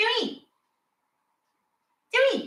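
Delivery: very high-pitched cat voice. Speaking for the cat to the audience; voicing Sonia the cat. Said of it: "sorry for my cat voice".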